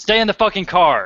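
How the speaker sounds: very loud, high-pitched yell. Voicing a character ordering someone to stay in the car: yelling. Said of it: "she yells over to".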